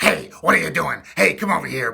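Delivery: very loud, rough, airy throat growl. Demonstrating a character voice for a learner to try, in a growly throaty voice. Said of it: "a lot of air and there's a lot of growling in your throat".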